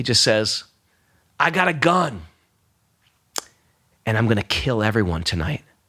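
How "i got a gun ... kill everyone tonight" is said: put-on calm, authoritative, dead serious, sober, commanding tone. Retelling what a man with a gun said at a club: imitating a commanding, sober voice. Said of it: "in a very commanding yet just sober voice".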